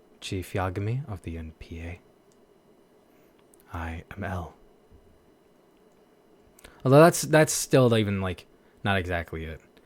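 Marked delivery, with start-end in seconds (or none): 0.2-4.6 flat, low, slow deadpan monotone with no emotion. Showing how to do a character's voice by hitting a low tone: l impression, low emotionless tone. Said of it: "you gotta hit like this low tone of like no kind of emotion".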